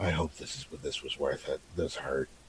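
very hushed, low, quiet grumbling mutter. Voicing a character polishing a shield, muttering under his breath. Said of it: "under his breath, he just goes".

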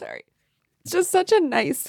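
speaking through tears. Apologizing to the others mid-conversation, crying while talking. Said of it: "she's actually crying".

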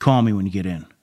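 very curt, short, rude tone. Retelling a shift lieutenant's voicemail, imitating a rude tone. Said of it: "real asshole-y".

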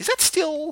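squeaky, very high-pitched, disbelieving tone. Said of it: "you're like".

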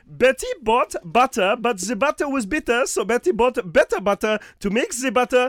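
speaking with German accent.

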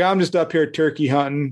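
ordinary delivery

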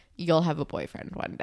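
plain

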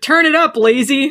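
loud, high-pitched yelling. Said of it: "she yells at Leo".

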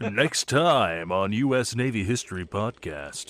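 grand, slow, dramatic anime announcer voice. Teasing the next podcast episode, in an anime announcer voice. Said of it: "my anime announcer voice".

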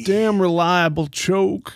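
put-on Southern accent. Joking about an old boat motor: put-on southern voice. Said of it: "we haven't done the Southern voice".

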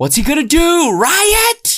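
very high, swooping, ranting scream. Recounting the last version, acting out the dad's line, imitating someone screaming.

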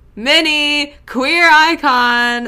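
very high, loud yell, icon drawn out. Recapping a story, the speaker celebrates a character's reveal, yelling. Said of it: "Sorry, I'm yelling".

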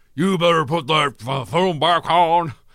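loud, high bellowing shout, like a cartoon rooster. Hulk Hogan, in his wrestling gear, shouts at the gremlins, in a bad Hulk Hogan impression. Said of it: "Sound like an old train controller".

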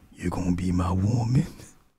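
slow, hushed half-whisper. Retelling what men in the grocery store half-whisper: imitating a man's half-whisper. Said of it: "y'all gonna hear that whisper".

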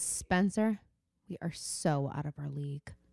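put-on dark, ominous, foreboding, scary delivery. Retelling a show character's line: imitating a foreboding, scary line. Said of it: "foreboding, scary way".

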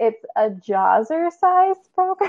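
talking through laughter. Describing a ridiculous online ad to a co-host, laughing while talking.

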